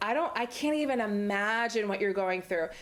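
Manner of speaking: ordinary talk, nothing marked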